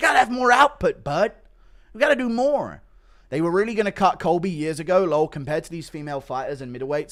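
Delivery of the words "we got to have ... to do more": very high, very loud, hard yelling. Giving corner advice to a fighter, in an Eric Nicksick impression. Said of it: "Impression of Eric Nixick giving corner advice".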